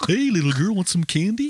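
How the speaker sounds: put-on very high, goofy, squeaky children's TV dinosaur voice. Joking around with the group, doing a Barney voice. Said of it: "Everybody's got a Barney voice".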